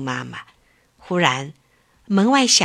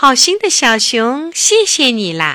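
clear, loud, ringing, resounding voice; 4 semitones higher, 4 dB louder than usual. A little bird thanks the little bear after drinking, in a loud ringing voice. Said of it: "用响亮的声音说".

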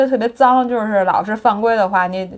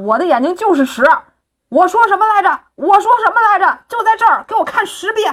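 put-on, worked-up, all-out high-pitched excited shouting; 8 semitones higher than usual. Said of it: "王蒙全程非常激动，大喊".

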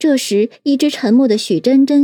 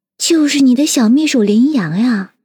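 plain

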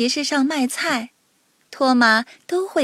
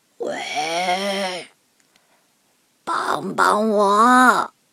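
low, raspy, rough, hoarse voice; 5 semitones lower than usual. Narrator reads a story; a voice calls for help from behind the house, hoarse voice. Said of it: "一个沙哑的声音从房子后面传来".

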